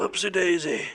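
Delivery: put-on grizzly bear voice. Retelling boosting someone up onto a shelf, speaking in a grizzly bear voice. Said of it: "in that nice grizzly voice".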